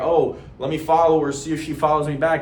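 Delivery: ordinary talk, nothing marked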